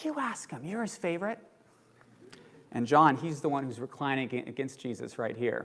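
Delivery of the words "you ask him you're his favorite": high, hushed, whispered aside. Retelling a disciple's aside to another disciple at the table, whispering. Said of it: "whispers to John".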